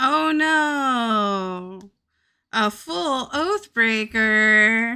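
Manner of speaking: sarcastic, mocking tone. Reacting to a full oath breaker: sarcastic. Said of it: "Can you hear the sarcasm?".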